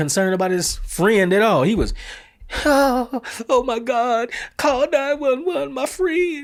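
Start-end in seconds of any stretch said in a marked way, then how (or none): 2.7-6.4 high, drawn-out, put-on fake sobbing. Retelling what a friend of a fallen man said: imitating someone fake crying. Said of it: "the dude was fake crying".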